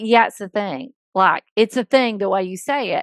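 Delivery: ordinary talk, nothing marked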